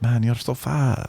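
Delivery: slight Jamaican accent, put-on. Imitating Europeans laughing at Americans: put-on accent, a bit Jamaican. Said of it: "I don't even know what accent that was".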